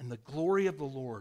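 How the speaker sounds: plain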